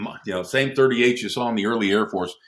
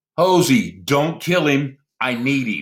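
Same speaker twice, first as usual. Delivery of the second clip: urgent, commanding, authoritative call; 4 semitones higher than usual. Retelling a fight, imitating Captain Reynolds yelling. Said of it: "I hear Captain Reynolds yell".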